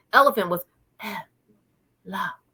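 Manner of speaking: put-on breathy, whispery voice. A parent demonstrates how their son used to talk: imitating breathy whispery speech. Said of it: "imagine doing a whole sentence like that".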